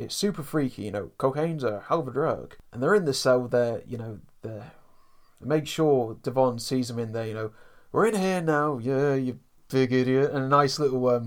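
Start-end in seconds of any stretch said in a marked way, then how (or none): 7.9-10.3 put-on delivery through gritted, clenched teeth. Recounting a scene where they make sure Devon sees him, through gritted teeth. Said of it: "through gritted teeth as well".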